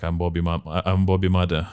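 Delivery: ordinary delivery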